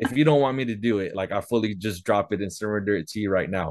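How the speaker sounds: plain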